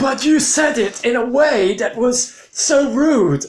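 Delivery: high, slow, loud, indignant mock whine.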